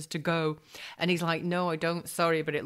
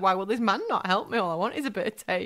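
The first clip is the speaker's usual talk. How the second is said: mock tearful pleading, higher-pitched; 3 semitones higher than usual. Retelling being refused help by a trucker, retelling own crying plea. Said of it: "And I'm, like, crying".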